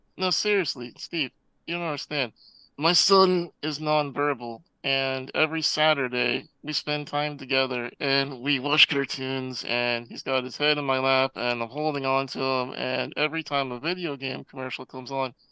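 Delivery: ordinary delivery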